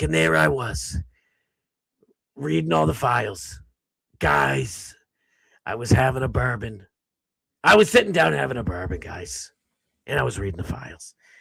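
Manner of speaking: hard-boiled film-noir voiceover, gumshoe narration style. Imitating Bongino, said to sound like a 1940s noir detective. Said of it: "Bongino's voice sounds like a forty, nineteen forties detective noir".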